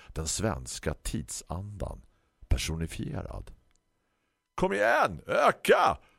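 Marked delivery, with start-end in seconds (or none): 4.6-6.0 very high, raspy, rough shout. Narrator reading a story, a runner calls back over his shoulder: shouted. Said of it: "Ropade Steve Jobs över axeln".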